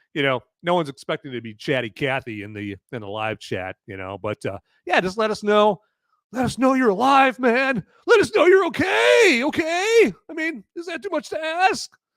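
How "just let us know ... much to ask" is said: very high, loud yelling. Asking viewers to say hi in the live chat: yelling. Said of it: "Sorry for yelling".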